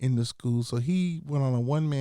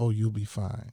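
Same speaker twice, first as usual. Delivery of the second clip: put-on muttering under the breath, lower; 3 semitones lower than usual. Retelling what a mentor said over lunch: imitating saying it under her breath. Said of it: "she said under her breath almost".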